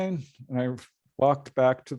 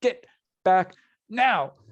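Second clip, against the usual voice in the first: put-on scream, higher pitch; 6 semitones higher, 3 dB louder than usual. Retelling how someone in the car screamed at them: imitating someone screaming. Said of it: "screaming at me".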